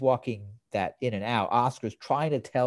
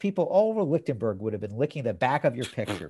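ordinary talk, nothing marked

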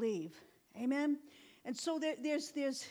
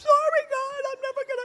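mock crying, high, loud, tearful pleading tone; 12 semitones higher, 10 dB louder than usual. Speaker retelling a night before going home to dad: imitating own past crying. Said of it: "I'm just crying".

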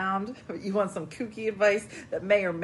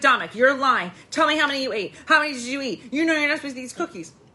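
put-on irritation in everyday voice, raised and high; 5 semitones higher, 6 dB louder than usual. Speaker acting out a woman berating someone over eaten cookies, imitating an aggravated scolding. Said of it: "she was like aggravated, but like a normal speaking voice".

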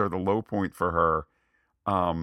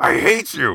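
put-on high, loud, cracking voice like a boy; 6 semitones higher, 7 dB louder than usual. Discussing an actor's line near the end, act it out, imitating Hayden Christensen's boyish voice crack. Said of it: "there is the boyish voice crack".

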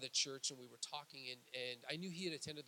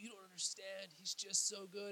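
put-on tearful, breaking voice, higher pitch; 6 semitones higher than usual. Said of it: "her voice would be breaking".

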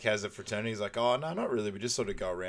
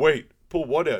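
very loud, slow, dragging, pitched-up voice; 5 semitones higher, 9 dB louder than usual. Retelling a man's reply after being told about a dart, imitating a slow voice. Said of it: "like the slow voice".

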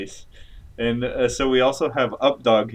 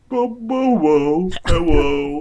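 very slow, stammering, high, loud, drawn-out caricature voice; 6 semitones higher, 6 dB louder than usual. Introducing a guest in a skit, making fun of Updog's voice. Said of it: "stop making fun of Updog's voice".

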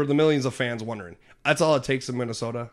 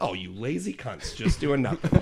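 acted playful, joking teasing tone. Retelling walking in on two helpers and teasing them, retelling a joking insult. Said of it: "I said it as a joke".

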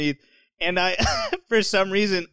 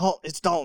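imitated whisper; 4 dB quieter than usual. Retelling own words on a phone call: imitating own past whisper. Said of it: "Why are you still whispering?".

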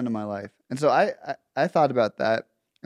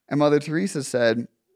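ordinary talk

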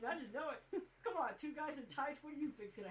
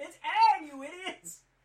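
loud, high yelling. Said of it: "I think I even yelled at the screen".

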